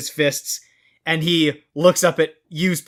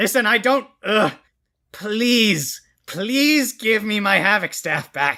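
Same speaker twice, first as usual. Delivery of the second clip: screaming villain voice, higher; 5 semitones higher than usual. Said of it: "screaming out for the return of his Havoc Staff".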